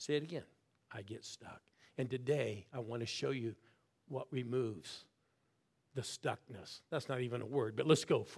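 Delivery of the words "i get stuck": hushed whisper, lower and quieter. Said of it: "I want you to whisper".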